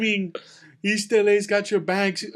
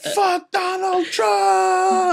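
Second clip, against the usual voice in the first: mock screaming, higher and louder; 11 semitones higher, 4 dB louder than usual. Retelling a man in the back who kept screaming: imitating someone screaming. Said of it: "he's screaming so much".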